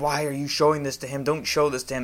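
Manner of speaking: mock screaming. Retelling how grandma caught them watching a horror movie: imitating grandma screaming.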